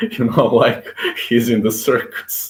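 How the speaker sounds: talking through laughter.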